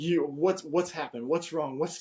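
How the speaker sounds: loud, high-pitched screaming. Telling how a mother woke at three in the morning, imitating her screaming. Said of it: "She starts screaming like".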